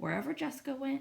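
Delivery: plain reading voice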